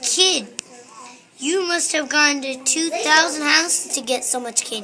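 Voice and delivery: ordinary talk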